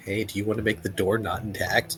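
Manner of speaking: whispering. Leaning over to another character in a game scene: whisper. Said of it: "lean over and whisper to Ralph".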